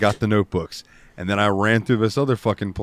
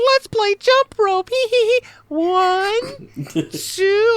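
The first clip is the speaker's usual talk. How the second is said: put-on tiny, very high, slow little-girl voice. Retelling a game where a little kid asks to play: imitating a little kid. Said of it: "she's like".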